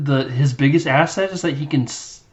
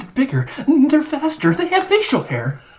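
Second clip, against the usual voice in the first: mock panicked ranting, higher; 11 semitones higher than usual. Retelling a movie scene where a player on the bench is freaking out: imitating character freaking out. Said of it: "freaking out 'cause Iceland's just destroyed".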